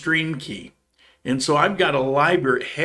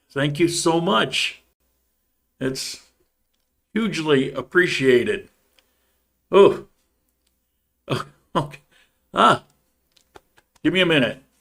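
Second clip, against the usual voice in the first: choked-up, verklempt, overcome with emotion. Speaker giving thanks and asking for a minute, choked up. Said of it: "I'm choked up".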